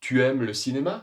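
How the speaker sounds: voice rises at the end on cinéma. French lesson on informal yes-no questions: rising pitch on cinéma. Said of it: "Il y a une intonation montante. Nous allons monter notre voix".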